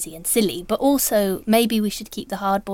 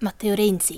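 Italian-style pronunciation. Asked to say the former Prime Minister's name, speaker uses Italian pronunciation. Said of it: "and Italian, say the name of the former Prime Minister".

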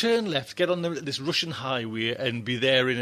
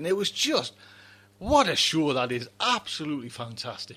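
choked-up, near-tearful voice. Speaker praising a show that had them in tears, getting choked up. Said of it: "I am getting all choked up again".

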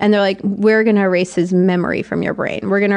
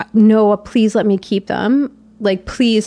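put-on hysterical crying and sobbing. Recounting the moment all the memories came out, retelling hysterical crying and begging. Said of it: "I like cried hysterically and was just like".

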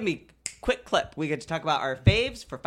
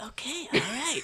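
put-on high-pitched old man voice; 8 semitones higher, 5 dB quieter than usual. Imitating an old actor greeting admirers: high-pitched old man voice. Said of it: "His really high-pitched old man voice".

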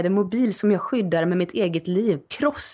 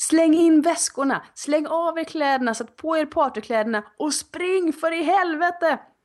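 shouted, high-pitched voice; 9 semitones higher than usual. Telling a travel story, retelling yelling at the kids and a companion. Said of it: "Och så skrek jag bara".

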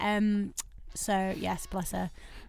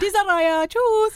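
put-on loud, high German accent, "choose" accented; 11 semitones higher, 8 dB louder than usual. Explaining how he said a word to James: German teacher accent. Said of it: "like how a German teacher says choose".

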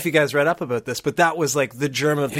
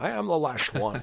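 slow, drawn-out movie trailer voice; 7 dB quieter than usual. Retelling how every kid at school quoted the trailer: Sean Connery impression. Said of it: "a Sean Connery impression".

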